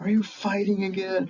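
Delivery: high-pitched shrill yelling. Retelling how the mom yelled at the kid: imitating a mom yelling. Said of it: "I hear the mom yelling at the kid".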